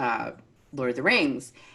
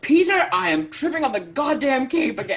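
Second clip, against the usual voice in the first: put-on actor-style yelling, higher and louder; 13 semitones higher, 7 dB louder than usual. Retelling an impression of Christopher Lee yelling at the director about a cape: imitating Christopher Lee yelling. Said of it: "completely broke character to yell at Peter Jackson".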